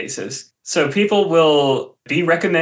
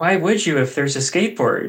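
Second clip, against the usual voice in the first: ordinary talk, nothing marked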